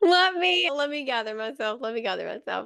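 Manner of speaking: speaking through uncontrollable laughter. Trying to compose yourself while talking with another speaker, laughing. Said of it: "sorry, I can't stop laughing".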